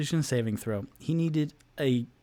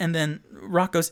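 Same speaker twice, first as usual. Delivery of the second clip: ordinary talk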